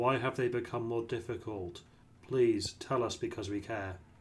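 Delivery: expressionless, flat, level deadpan monotone. Asking another speaker why things have become more difficult: deadpan. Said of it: "you're saying that deadpan".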